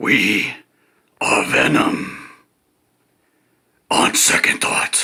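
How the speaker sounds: poorly done monster voice. Speaker's self-described shitty impression, line delivered in a Venom voice. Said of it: "my shitty impression of the Venom voice".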